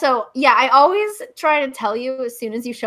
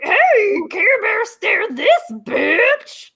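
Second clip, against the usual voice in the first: high-pitched cartoon monster creature voice; 9 semitones higher than usual. Told they sound like the Jabberwocky, answering in a Jabberwocky voice. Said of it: "I'm the Jabberwocky".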